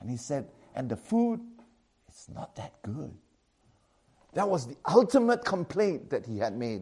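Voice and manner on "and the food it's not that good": quiet, lowered, hushed, under-the-breath voice. Retelling a student's complaint about food, imitating someone lowering his voice. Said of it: "he lowered his voice".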